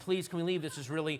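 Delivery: put-on childlike voice, begging and pleading. Retelling how two young kids begged their dad to leave a movie: imitating kids begging. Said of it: "begging the dad".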